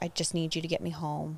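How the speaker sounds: put-on sobbing. Speaker retells calling Sam from the car after hanging up, reenacting sobbing on the phone. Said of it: "I started sobbing".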